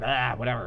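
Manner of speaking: uninterested, flat, bored monotone. Imitating how a character's voice actor sounds, imitating a bored voice actor. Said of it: "he just sounds so bored, like".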